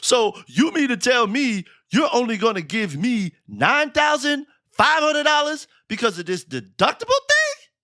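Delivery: put-on worked-up, heated voice. Retelling a client's complaint about the deductible: imitating Jerome, heated. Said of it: "and he's heated".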